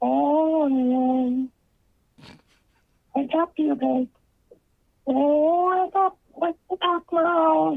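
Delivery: male faking a high-pitched voice. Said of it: "sounds like a male voice trying to put on a high pitched voice".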